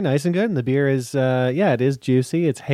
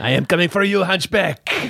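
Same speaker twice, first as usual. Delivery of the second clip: fake, pitched-up French villain accent; 5 semitones higher than usual. Playing the bad guy from Hunchback of Notre Dame, threatening the other speaker: French accent. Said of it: "Is that a French accent?".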